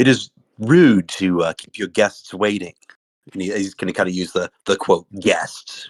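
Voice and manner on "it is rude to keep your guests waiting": loud, raised voice. Playing a character at the table, addressing a crowd that won't quiet down, raised voice. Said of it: "raise his voice and go".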